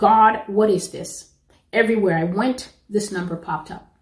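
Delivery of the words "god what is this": play-acted, sudden, fed-up blurted cry of consternation. Retelling own past words to God: retelling own outburst. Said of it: "had an outburst one day and said".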